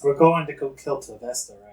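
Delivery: whispered aside. In a role-playing scene, whispering to the others so the shopkeep doesn't hear. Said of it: "I'll whisper this so the shopkeep doesn't hear it".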